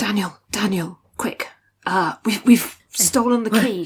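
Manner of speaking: quiet, hushed whisper. Playing a character trying to get another's attention, whispering. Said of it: "He's he's whispering".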